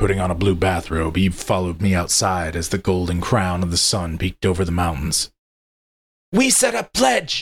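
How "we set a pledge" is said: very high, rough, slow, angry hiss. Narrator reads Eve's words to the narrator, who is leaving, an angry hiss. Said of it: "she hissed angrily".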